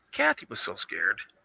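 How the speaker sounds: very quiet, hushed, barely voiced whisper. Making an aside while telling a story, speaking quietly. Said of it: "I'm going to say this quietly".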